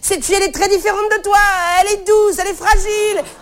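high-pitched, fast, gushing delivery.

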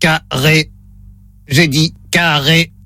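low, flat, mechanical monotone robot voice. Testing someone's hearing over the phone, the speaker voices the robot, robot voice. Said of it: "Voix de robot enclenchée".

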